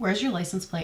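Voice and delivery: put-on slight anger. Retelling what a man asked on coming inside, retelling a little upset question. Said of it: "he's like a little upset, like angry".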